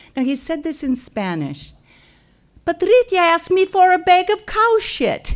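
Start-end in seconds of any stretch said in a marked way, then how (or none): 2.7-5.4 very loud, high-pitched, acted-out outburst. Retelling what a boy said loudly to his mother, retelling a loud line. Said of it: "He said it real loud".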